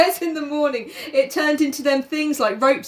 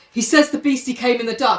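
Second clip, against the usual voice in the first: usual speaking voice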